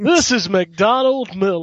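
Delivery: put-on, forced American accent. Imitating Master Miller's call to Snake: Master Miller's forced American accent. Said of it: "his American accent is so trying to be American".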